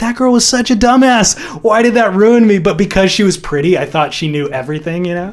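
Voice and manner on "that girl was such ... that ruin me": high, loud, annoyed scoffing voice. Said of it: "I was like".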